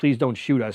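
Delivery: put-on tearful, crying, pleading voice. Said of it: "run into Turkey crying".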